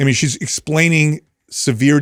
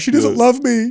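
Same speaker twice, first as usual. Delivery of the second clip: mock very high, tearful, sobbing voice; 11 semitones higher than usual. Retelling what a son said after he started crying: imitating someone crying. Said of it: "started crying".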